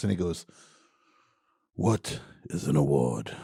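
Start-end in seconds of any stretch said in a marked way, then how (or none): 1.8-3.3 soft, deliberate, very quiet, slow, hushed voice. Retelling a comedy sketch's award-show bit: quiet Richard Harris voice. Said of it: "He's talking so quietly".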